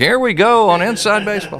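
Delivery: put-on very high, old-style transatlantic announcer voice. Introducing the next topic to listeners, transatlantic announcer voice. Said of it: "I need to go into one of those announcer voices. Like".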